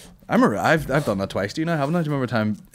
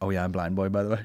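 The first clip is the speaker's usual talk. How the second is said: normal talking voice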